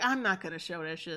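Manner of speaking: mock voice full of disgust and distaste. Quoting what a man said in his video, in a mock-disgusted voice. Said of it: "in a disgusted voice".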